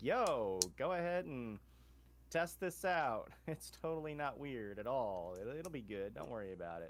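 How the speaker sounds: laid-back, offhand, slow, breezy casual pitch. Retelling how an organization contacted a school: imitating casual reassurance. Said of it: "The Foundation just contacted a regular-ass civilian school and was like".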